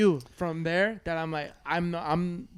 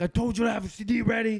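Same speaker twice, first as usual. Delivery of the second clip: mock angry, snapping voice; 4 semitones higher than usual. Retelling a dad walking in on him: imitating dad snapping. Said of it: "he snaps".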